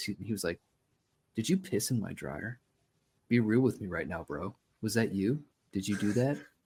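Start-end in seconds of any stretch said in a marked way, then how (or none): 1.3-6.4 put-on deadly serious tone. Speaker retelling a guy questioning them after several beers, mock dead-serious tone. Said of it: "he looked at me just like dead serious".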